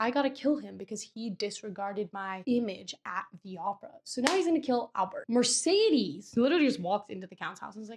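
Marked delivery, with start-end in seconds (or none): none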